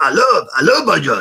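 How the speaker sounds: loud, terrible put-on tough American voice, belted badly. Quoting a cameo line as Mister T, imitating Eddie: imitating Eddie doing Mister T. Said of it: "me doing an impression of Eddie being racist".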